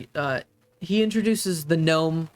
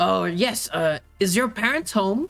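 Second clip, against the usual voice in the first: put-on older-sounding voice, pitched much higher; 3 semitones higher than usual. A visitor at the door asks a child about the parents, older-sounding voice. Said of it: "You hear an older sounding voice say".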